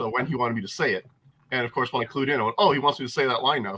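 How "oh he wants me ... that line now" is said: plain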